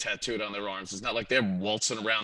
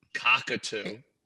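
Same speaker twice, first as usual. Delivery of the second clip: "cockatoo" said deliberately, slow and stretched out. Saying a bird name after being asked to, said slowly. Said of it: "Say it slow".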